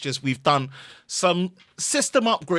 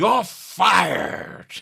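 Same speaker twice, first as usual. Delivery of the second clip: rough, raspy, high-pitched, dismissive tone; 5 semitones higher, 4 dB louder than usual. Urged by another speaker to try it, answering in a Vince McMahon voice. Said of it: "You should do it with the Vince McMahon voice".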